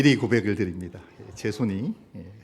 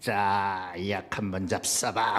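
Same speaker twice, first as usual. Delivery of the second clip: altered, disguised, put-on advertisement voice; 4 dB quieter than usual. Introducing an ad for a pill: disguised voice. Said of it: "목소리를 좀 변조해야 될 것 같습니다 ... 이렇게 변조해야".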